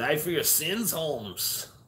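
weak put-on Mexican voice. Joking that Jesus has a Mexican name, voicing Jesus in a bad Mexican accent. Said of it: "It's the best Mexican voice I can do".

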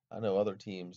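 ordinary delivery

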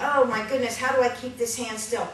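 plain

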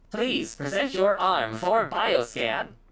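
high-pitched, machine-like robotic computer voice. Narrating a scene at a shuttle bay door, the speaker voices a panel, robotic voice. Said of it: "you hear a robotic voice say".

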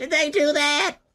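very high-pitched, nerdy voice. Someone has just brought up the character, and you answer in a Steve Urkel voice. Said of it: "that's Steve Urkel".

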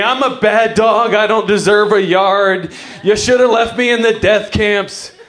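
dramatic, put-on whiny dog voice. Voicing their dachshund as it gets whiny, in a mock-whiny dog voice. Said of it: "he starts getting real whiny".

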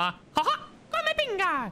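high, bouncy squeaking voice. Having meant to do it in character the first time, say it again in a Mickey Mouse voice. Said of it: "I meant to do it in Mickey Mouse voice".

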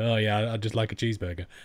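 put-on sarcastic tone. Showing how the remark would sound if not meant: put-on sarcastic tone. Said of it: "a sarcastic kind of".

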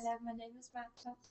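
soft, quick, murmured mock English accent. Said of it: "Everybody else is gonna do an English accent".

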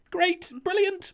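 very high-pitched, nervous, upbeat voice. Reacting to hearing the ride will be in survival mode: voice gone up an octave. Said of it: "My voice hasn't gone up a, an octave".

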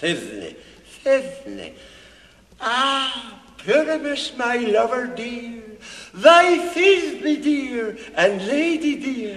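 tiny, high monstrous voice, stretched "ah". An actor asking to play Thisbe too, showing a monstrous little Thisbe voice. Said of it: "I'd speak in a monstrous little voice".

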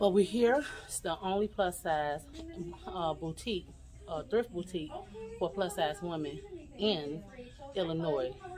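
hushed half-whisper. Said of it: "I'm kinda whispering".

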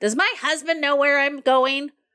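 high, snotty, snippy tone. Retelling leaving with their mother, the speaker imitates her snotty tone. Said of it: "always that snotty tone of voice".

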